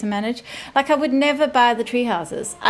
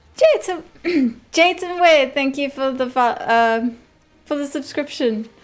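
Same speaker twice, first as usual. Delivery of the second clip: voice suddenly jumping super high in pitch; 3 semitones higher than usual. Speaker thanks a viewer for the subscription, voice going super high. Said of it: "you made my voice go super high there".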